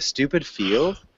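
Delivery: "field" stressed hard with rising pitch. Teaching question intonation in a class, with stress and rise on 'field'. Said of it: "field is really emphasized. Um, and you have to like raise the intonation of your voice too at the end".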